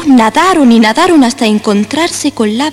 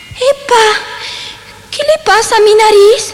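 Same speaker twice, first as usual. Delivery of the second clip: piercing, very high, shrill shriek; 10 semitones higher than usual. Someone whose nose keeps growing after telling a lie, shrieking. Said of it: "chilló Pinocho".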